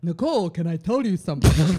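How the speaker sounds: threatening conqueror voice. Describing being approached by someone feared, in an Attila the Hun impersonation. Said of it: "That's my Attila the Hun impersonation".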